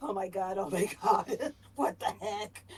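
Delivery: panicked. Mibble sits on the bed with his hands on his head; Mibble freaking out. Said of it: "Middle is sort of freaking out".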